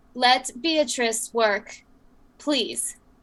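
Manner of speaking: polite tone heavy with menace, intimidating. Speaking in character to guards who rush a worker: intimidating voice. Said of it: "and in an intimidation voice".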